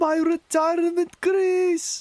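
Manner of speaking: very high-pitched Scottish voice. Recalling a Simpsons episode and quoting the line: Willie voice. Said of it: "The best I can do is Willie the Scotsman".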